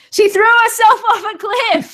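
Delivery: loud, laughing, high yell. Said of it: "you can hear [name] from the other side of the room yelling".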